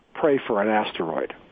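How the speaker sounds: plain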